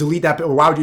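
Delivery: normal talking voice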